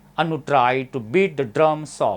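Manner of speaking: beat and drum each stressed. Reading an English practice sentence aloud, stress on beat and drum. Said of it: "बीट drum याच्यावरती मी काय केलेलं आहे? Stress दिलेला आहे".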